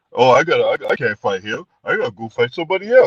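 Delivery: put-on stammering delivery in a Mexican accent. Mocking a boxer for ducking a fight, in a Canelo voice. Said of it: "in his Mexican voice".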